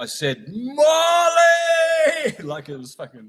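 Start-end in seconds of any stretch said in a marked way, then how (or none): 0.5-2.3 piercing, very high, drawn-out roaring scream. Recalling screaming at molly to stop her hitting him: retelling a roaring scream. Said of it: "I let out this Leo Aries roar".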